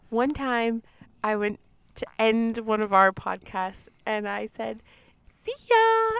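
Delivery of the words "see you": weird, very high-pitched, loud voice. Recalling how he once ended a podcast, in a weird high-pitched voice. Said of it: "I did this really weird high pitched voice".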